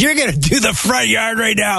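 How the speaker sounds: put-on high yelling.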